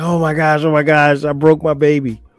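put-on panicked voice. Retelling the moment a baby rolled off the couch: retelling own panic. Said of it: "I panicked".

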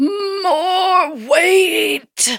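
put-on crushed, strained old man voice, very high. Quoting a household catchphrase in an old man under a ton of rocks voice. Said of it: "in an old man under a ton of rocks voice".

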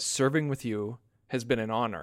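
plain

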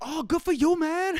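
put-on very high-pitched, slow old man voice. Retelling what an old restaurant owner said: imitating an old restaurant owner. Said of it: "he's like".

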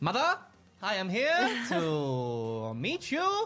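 very slow, swooping put-on voice, "to" stretched out. Imitating a child who talks like the SNL comedian: Jon Lovitz voice. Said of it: "Who talks like what's his face from SNL?".

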